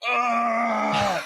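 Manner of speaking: high, loud pained yell.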